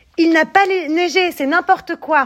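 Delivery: shouting angrily. Narrator reads Marius's line as his friends all talk at once: shouting angrily. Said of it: "crie Marius en colère".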